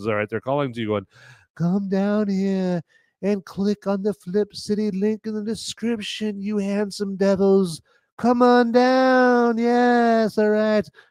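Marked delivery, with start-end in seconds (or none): 1.5-10.9 bad put-on haunting siren female voice, drawn-out downward. Voicing sirens calling viewers to a description link, terrible female voice. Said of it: "my terrible female voice".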